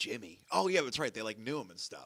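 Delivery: ordinary talk, nothing marked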